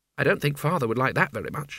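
usual speaking voice

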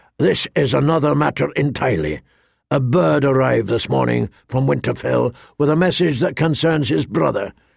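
ordinary delivery

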